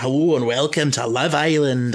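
badly done TV voiceover narrator voice. Imitating the voice of Love Island's narrator: Love Island narrator voice. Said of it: "I can't do this voice very well".

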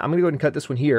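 very fast, rushed, hurried delivery.

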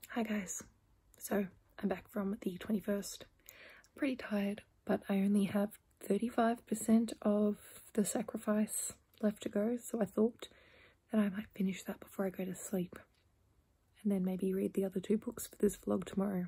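hushed voice. A vlogger talking to viewers before going to sleep, speaking very quietly. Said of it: "I'm speaking very quietly".

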